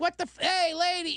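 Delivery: high, held-back half yell. Retelling calling out to a distracted driver on the highway, half yelling. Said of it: "So I'm like kind of yelling, but I'm like not yelling".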